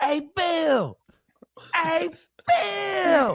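high, slow, drawn-out call of a name. Retelling a teammate calling out to the coach at practice: imitating Randy Moss calling out. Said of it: "and he can do the voices".

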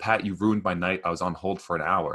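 normal talking voice

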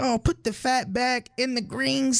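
put-on very high-pitched elderly woman voice.

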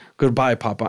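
put-on flat, toneless, feelingless disappointed voice. Retelling the oldest child's goodbye at the casket: imitating a flat, disappointed goodbye. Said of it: "with no feeling, she was just, like, disappointed".

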